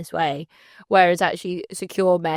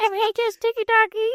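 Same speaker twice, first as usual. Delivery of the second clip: put-on very high, babyish baby talk. Mocking a TikTok handle, saying it in a baby voice. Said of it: "should be said in like a baby voice".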